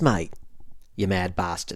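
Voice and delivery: Australian accent on every word. Showing how british, scottish and irish people start talking: australian accent. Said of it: "apparently you start talking like this".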